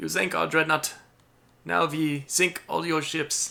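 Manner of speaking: put-on German accent. Imitating the Germans in a game, attempted German accent. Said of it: "It's my attempt at a German accent".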